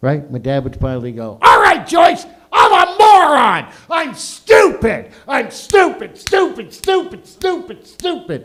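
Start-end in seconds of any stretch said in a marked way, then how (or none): 1.4-8.5 loud, shrill, very high-pitched, swooping angry yell. Retelling an argument where dad gives in: imitating an angry dad yelling. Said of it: "my mom and dad would get mad".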